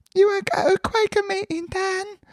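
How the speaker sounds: put-on very high-pitched London Cockney accent. Speaker quotes a woman in town inviting him along, in a high Cockney accent. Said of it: "she's like a very high kind of Cockney accent".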